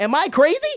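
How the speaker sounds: high, loud, frantic and insistent.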